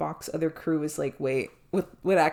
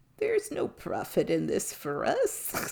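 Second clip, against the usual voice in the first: put-on drawn-out little old man voice, high and slow; 6 semitones higher than usual. Retelling a Ferengi's line while he holds out a phaser, little old man voice. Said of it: "goes in like this little old man voice".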